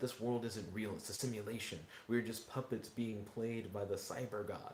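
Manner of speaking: ordinary delivery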